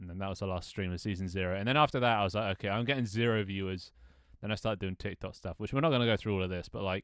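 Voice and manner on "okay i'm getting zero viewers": plain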